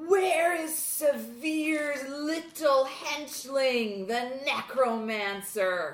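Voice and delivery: loud, high-pitched put-on yell. Playing a character who demands where the necromancer is: in-character yell. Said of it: "So I yell out".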